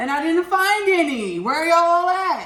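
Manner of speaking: high, loud calling-out shout.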